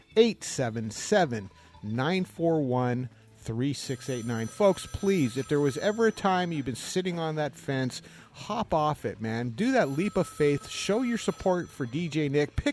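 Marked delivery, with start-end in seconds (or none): 0.1-4.4 deliberately very slow, careful delivery. Public radio host giving the pledge phone number, said very slowly. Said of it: "I'm going to say that very slow".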